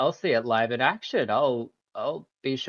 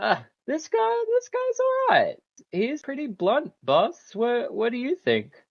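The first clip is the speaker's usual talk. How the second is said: loud, very high, swooping roaring laugh; 11 semitones higher than usual. Narrator voicing a character who pats you on the back, roaring with laughter. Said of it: "loud roaring laughter and goes".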